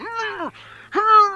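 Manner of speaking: put-on gagged moans. Speaker imitating a gagged man heard struggling, muffled moans. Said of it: "he just can't get them out as he's got a gag".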